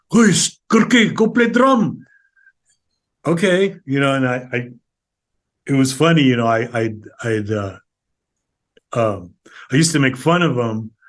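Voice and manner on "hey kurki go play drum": put-on very high-pitched, loud Filipino tito accent. Recalling how the old titos talked, imitating old Filipino elders' accent. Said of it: "That's that's how they talk".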